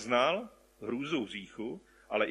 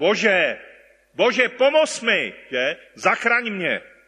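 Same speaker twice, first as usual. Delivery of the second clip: very loud, urgent, desperate pleading cry; 8 semitones higher, 13 dB louder than usual. Acting out how a person calls out to God, acting out a desperate cry. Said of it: "a řekl bych až zoufale, začal volat".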